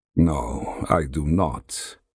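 deep, very low, drawn-out, slow, plain. A narrator reads Valerius answering the lackey who told them to wait, said quietly. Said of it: "Valerius said quietly".

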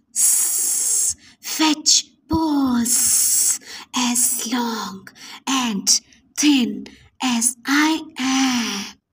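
sibilant snake hiss, am drawn out. Reading a story, a snake slithers past the two friends: hissing snake voice. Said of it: "A snake suddenly slithered past and hissed".

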